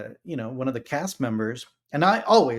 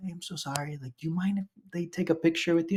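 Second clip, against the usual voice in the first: soft, pitched-up half-whisper under the breath; 5 semitones higher, 5 dB quieter than usual. Retelling how the wife asked someone for a photo with the kids: imitating a half-whisper. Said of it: "my wife whispers".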